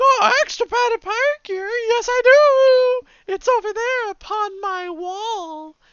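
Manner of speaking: very high, loud, tiny little-lady voice. Playing a tiny little lady who runs a pirate shop: voicing a tiny little lady. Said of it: "See a tiny little lady".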